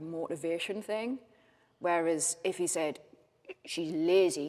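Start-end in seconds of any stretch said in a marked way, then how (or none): 3.6-4.5 flat, level, disgusted dismissive tone. Acting out how he would sound if he meant it, mock-disgusted and flat. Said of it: "sort of in disgust sort of".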